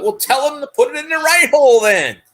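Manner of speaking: sudden, fed-up, high-pitched yell. Retelling what a teacher suddenly screamed out; imitating a teacher screaming. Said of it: "she screams out".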